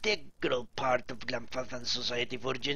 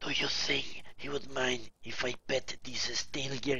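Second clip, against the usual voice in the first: whispering. Reading game text aloud, voicing a character's quoted line: whispering. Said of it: "He whispers".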